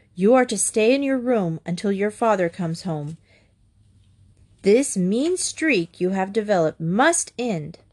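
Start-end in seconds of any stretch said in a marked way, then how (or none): none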